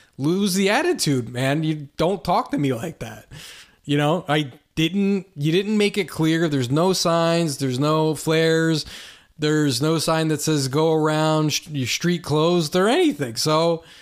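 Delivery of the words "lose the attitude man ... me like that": ordinary delivery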